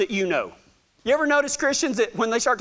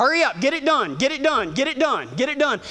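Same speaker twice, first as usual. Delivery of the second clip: repeated, reined-in, mild half-yell; 3 semitones higher than usual. Retelling branding, as he drags a calf to the fire, yelling at them. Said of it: "he's yelling".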